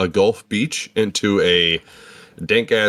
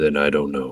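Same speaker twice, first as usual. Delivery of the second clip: acted spirit creature voice, in character; 6 semitones lower than usual. Voicing a spirit creature that answers a player in Draconic: voicing the spirit creature. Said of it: "do you wanna do the voice".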